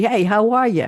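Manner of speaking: put-on New York accent. Telling how a store owner greets them, imitating a voice unlike their own, in a New York accent. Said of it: "Mark is pretending to be a New Yorker".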